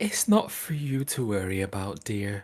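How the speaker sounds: dismissive, condescending, patronizing talking-down tone. Narrating a character who looks down at the listener and answers, condescending. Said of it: "Really condescending".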